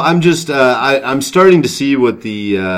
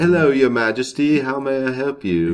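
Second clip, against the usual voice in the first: fake, genteel, put-on English accent; 6 dB quieter than usual. Joking with co-hosts about the queen's powers, in a put-on English accent. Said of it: "That's my English accent".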